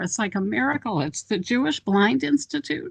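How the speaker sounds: tearful voice, close to breaking, on verge of crying. Finding a large-print resource after searching over and over, near tears. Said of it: "I'm like in tears here".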